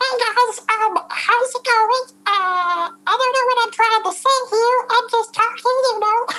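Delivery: tiny, very high chipmunk voice. Showing the different voices they can do, the speaker goes into a chipmunk voice. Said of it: "It's like a chipmunk".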